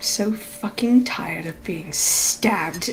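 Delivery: very quiet whispered mutter under the breath. Role-playing a character in a tabletop game, muttering under breath. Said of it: "very much under his breath".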